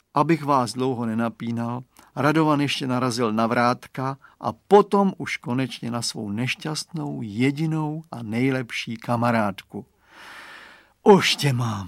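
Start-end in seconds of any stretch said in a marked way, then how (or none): 11.1-11.9 delighted, rejoicing, joyful cry. Someone finally finds his best friend by feel, joyful. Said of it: "zaradoval se".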